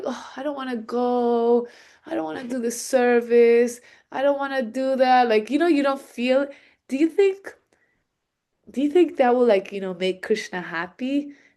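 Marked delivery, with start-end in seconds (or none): 0.1-5.3 mock-depressed, sad, reluctant voice, slower. Speaker mimicking someone reluctant to go to the temple; mock depressed, sad voice. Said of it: "like so like depressed and sad".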